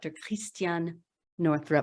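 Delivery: name said with French pronunciation. Introducing a guest on Ask Doctor Love, with the name in a French accent. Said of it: "My husband made me say it with the French accent".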